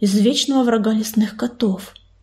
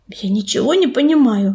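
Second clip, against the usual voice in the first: ordinary delivery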